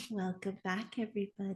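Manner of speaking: very soft, hushed late-night radio host voice. Welcoming listeners back to the episode: late night host voice. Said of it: "like, your late night host voice".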